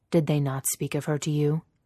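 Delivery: ordinary delivery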